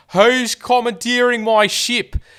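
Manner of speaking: shrill high yell. Retelling a scene where the whaling captain yells at Quaritch, imitating the captain yelling. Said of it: "And he's yelling at Quaritch".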